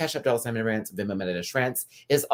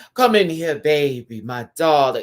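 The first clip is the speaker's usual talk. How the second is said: loud, grand, opulent, lavish grande dame flourish; 3 semitones higher, 7 dB louder than usual. Showing how a performer should have voiced the line: with grandeur. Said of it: "A little bit of that grandeur".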